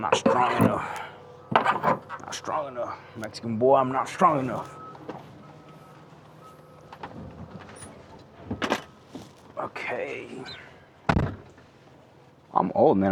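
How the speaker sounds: breathless, effortful grunting, out of breath. Saying they're not strong enough, grunting and out of breath. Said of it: "I'm just grunting and out of breath".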